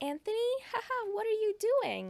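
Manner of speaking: very high, swooping, giggly, amused, acted out. Retelling a movie scene where a woman answers a payphone: imitating a woman giggling. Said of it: "She kinda starts giggling".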